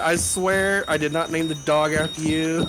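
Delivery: plain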